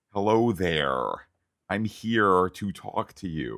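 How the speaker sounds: put-on overdone American accent, slow, over-hardened R. Critiquing a woman's American accent, imitating it: American accent with too-hard R. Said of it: "too much of the hardening of the R".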